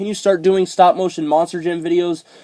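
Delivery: ordinary talk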